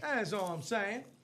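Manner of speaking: sassy as can be, playful, laid on thick. Repeating a boast about a family street name, mock sassy tone. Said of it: "As I stand as sassy as possible".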